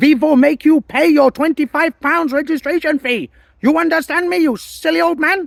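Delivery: fake German accent, very high, shrill, very loud. Acting out how an author imagines the speaker talking, put-on german accent. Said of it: "he imagines me speaking in a German accent".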